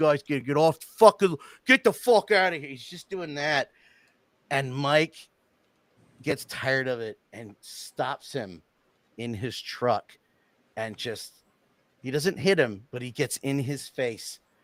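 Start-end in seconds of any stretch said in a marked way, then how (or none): 0.0-2.7 put-on full-on, loud, rushed Philadelphia accent. Retelling a man in a truck telling skateboarders to leave: strong philadelphia accent. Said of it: "Philadelphia all the way, talking like this".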